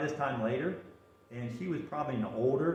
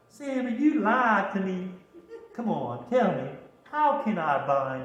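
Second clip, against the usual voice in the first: put-on, slow, loud, drawling southern accent; 5 semitones higher, 6 dB louder than usual. Retelling the Samson story, voicing someone pressing Samson for his secret, southern accent. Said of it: "he uses a southern accent".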